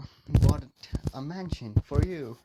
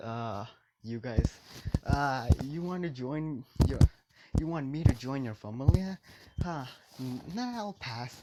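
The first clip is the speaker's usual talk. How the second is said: ordinary talk, nothing marked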